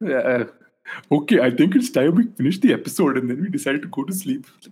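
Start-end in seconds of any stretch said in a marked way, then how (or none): 1.1-4.4 put-on Indian accent. Wrapping up the episode after being told it was spot on, Apu impression. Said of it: "no one talks like this".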